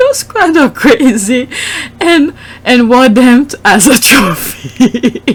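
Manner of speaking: high, slow speech through laughter. Reading tweets aloud and apologizing for cracking up: laughing while talking. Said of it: "I'm sorry, I'm laughing".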